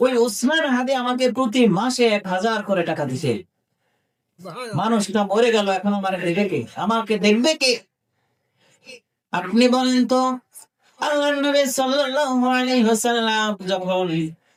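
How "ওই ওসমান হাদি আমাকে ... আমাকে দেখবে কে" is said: ordinary talk, nothing marked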